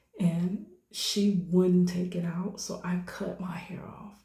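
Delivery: ordinary talk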